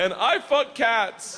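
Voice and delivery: very high, slow, booming, boastful robot-style voice.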